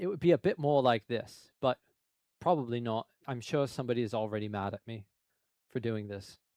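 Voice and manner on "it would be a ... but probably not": put-on British accent. Explaining their own accent, showing how they'd sound if British: fake British accent. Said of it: "If I was British".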